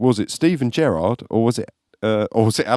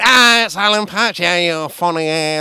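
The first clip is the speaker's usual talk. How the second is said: put-on Scouse accent, higher; 7 semitones higher than usual. Retelling what a man said when he tried to put his arm around you, imitating his Scouse accent. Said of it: "in his fucking Scouse accent".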